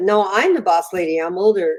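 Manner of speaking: ordinary talk, nothing marked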